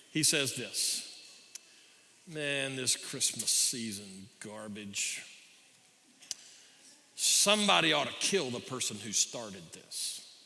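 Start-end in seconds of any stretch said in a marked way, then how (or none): 2.3-10.2 put-on grumble, half-muttered under the breath. Retelling a joke about a shopper in a crowded elevator: imitating a half-muttered grumble. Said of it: "half under his breath and half intending somebody to hear".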